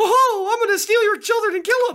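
very high-pitched cartoonish voice. Retelling a son's violent jokes, imitating a Mickey Mouse voice. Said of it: "gotten really good at imitating Mickey Mouse".

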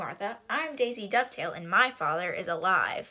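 normal talking voice

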